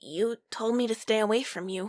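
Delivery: quiet, softly spoken voice. Narrator reads the character answering Dave's demand, said quietly. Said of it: "you say quietly".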